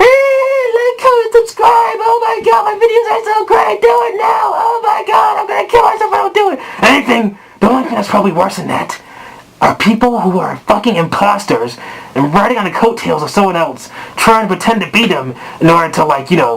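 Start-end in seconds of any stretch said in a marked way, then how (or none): 0.0-6.6 screaming voice. Mocking people who scream for likes and subscribes: imitating screaming YouTubers. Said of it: "people on fucking YouTube screaming".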